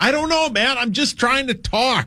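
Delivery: loud yelling, shouting voice. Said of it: "Why are you yelling at us?".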